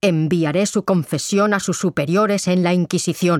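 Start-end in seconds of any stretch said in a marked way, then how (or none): none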